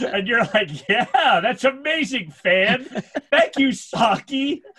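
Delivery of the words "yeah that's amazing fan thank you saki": slow, preachy preacher voice. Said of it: "you sound like a preacher".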